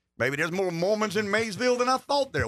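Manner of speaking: sarcastic sing-song. Delivering a line after announcing it will be real sarcastic: sarcastic. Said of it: "I could be real sarcastic".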